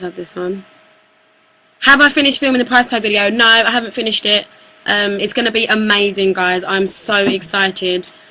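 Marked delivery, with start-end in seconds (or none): none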